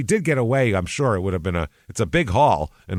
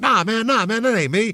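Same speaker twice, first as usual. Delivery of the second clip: put-on squeaky voice, forced very high; 12 semitones higher than usual. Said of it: "He's making his voice all high".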